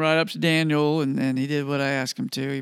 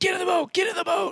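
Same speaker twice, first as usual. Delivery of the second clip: very high shout at top of lungs, full-throated. Retelling a warning after seeing a gigantic shark: reenacting yelling at top of lungs. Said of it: "I yelled to Don".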